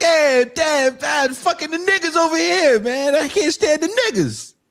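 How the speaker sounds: very high, loud New York Italian man voice. Imitating Italians in a Spike Lee movie: imitating New York Italians. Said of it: "all those Italians are like".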